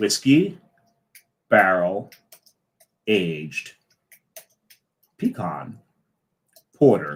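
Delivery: slow careful word-by-word delivery. Asked to repeat a long beer name, the speaker reads it slowly. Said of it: "Do that again slowly".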